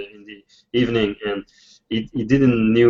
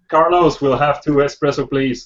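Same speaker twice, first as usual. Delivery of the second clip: put-on completely American accent throughout; 3 semitones higher than usual. Your accent has suddenly changed as you ask for something; use an absolutely american accent. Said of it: "suddenly my accent is, is all absolutely American".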